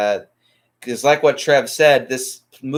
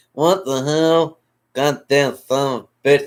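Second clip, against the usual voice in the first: put-on, slurred eighties garbage man voice. Quoting the angry garbage guy from the original movie: slurred eighties garbage man voice. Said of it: "in that really slurred eighties, uh, garbage man voice".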